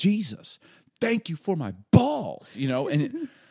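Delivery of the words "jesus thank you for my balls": put-on top-of-lungs, high, loud, swooping joyful child shriek. A dad retells his five-year-old screaming in a small-town restaurant, imitating a five-year-old screaming. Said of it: "he screams at the top of his lungs".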